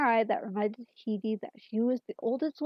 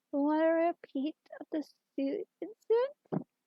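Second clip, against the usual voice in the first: saccharine, syrupy, sickly sweet pitched-up voice; 6 semitones higher than usual. Reading a story aloud, a character threatens a puppet: sickly sweet voice. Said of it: "sickly sweet voice".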